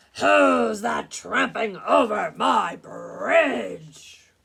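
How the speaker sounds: very loud, rough-edged, bellowing troll roar. Narrator reading the Billy Goat Gruff tale, as the Troll on the bridge: roaring troll voice. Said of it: "roared the Troll".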